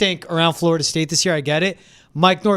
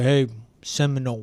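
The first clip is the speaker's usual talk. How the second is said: put-on, lower-pitched country twang; 4 semitones lower, 4 dB quieter than usual. Imitating people from Tallahassee, in a country twang. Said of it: "They have that twang".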